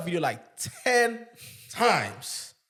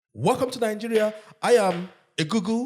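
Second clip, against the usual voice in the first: mock interviewer voice, higher pitch; 3 semitones higher than usual. Acting out the interviewer greeting a guest: imitating an african interviewer. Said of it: "The biggest, um, African interviewer".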